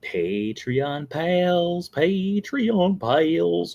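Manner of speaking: goofy, high cartoon voice with drawn-out pals. Podcast host thanking the show's Patreon supporters, in a Goofy voice. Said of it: "Why am I sounding like Goofy?".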